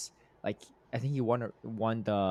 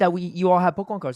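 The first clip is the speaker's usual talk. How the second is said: put-on very high, very loud upset child voice; 10 semitones higher, 12 dB louder than usual. Speaker retelling a kid's complaint at the park, imitating an upset kid. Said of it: "he's like super upset".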